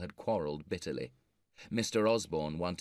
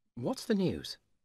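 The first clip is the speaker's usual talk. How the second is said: keen, eager, very high-pitched voice; 11 semitones higher than usual. Narrator reads a character asking a visiting friend for news, asking eagerly. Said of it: "George asked eagerly".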